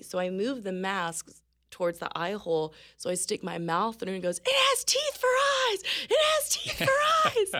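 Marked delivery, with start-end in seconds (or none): 4.4-7.6 very high, loud, shrill screaming. Retelling a man's reaction to her mouth through a mask's eye hole, retelling a loud scream. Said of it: "And he's screaming loudly".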